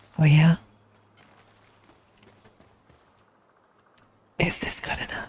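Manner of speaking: soft whisper, close to the ear. Answering a chat request to whisper in their ear: whispering. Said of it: "Am I whispering enough for you?".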